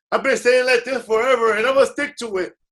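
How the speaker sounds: loud, high-pitched mock American English accent.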